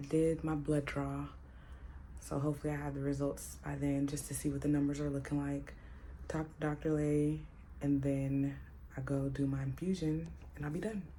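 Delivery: hushed whisper. At a doctor's appointment with the doctor next door, whispering. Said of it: "I'm whispering because my doctor's next door".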